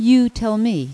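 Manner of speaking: half pleading, half insistent. A man who cannot walk turns the question back on the narrator, pleading and demanding. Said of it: "It was both a plea and a demand".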